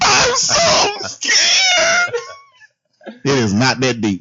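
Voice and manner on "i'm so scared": put-on very high, overblown, dramatic show of fear. Imitating Jessie's pill scene, mocking her: imitating Jessie's dramatic panic.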